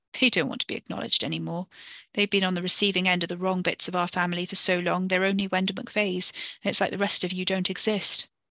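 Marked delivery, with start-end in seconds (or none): none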